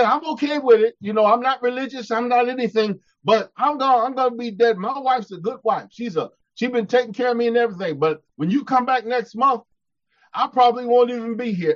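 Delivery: ordinary delivery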